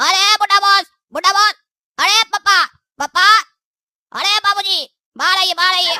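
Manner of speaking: shouting. A character calls an old boss to come outside, shouting. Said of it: "काहे चिल्ला रहे हो?".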